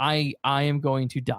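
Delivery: put-on, very slow, trembling voice full of dread. Retelling a scene where Emil leaves the office: imitating Emil shaking with fear. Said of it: "he's shaking, he's like".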